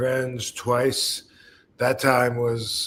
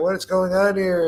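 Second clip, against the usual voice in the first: play-acted high-pitched scolding yell; 7 semitones higher than usual. Retelling how the wife came out to the pool: imitating someone yelling. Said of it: "she's yelling at him".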